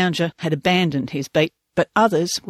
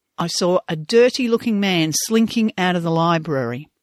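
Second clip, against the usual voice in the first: normal talking voice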